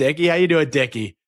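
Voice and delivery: put-on Boston accent. Speaker recalls two people greeting each other as dickie: imitating a boston accent. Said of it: "they would talk in the Boston accent".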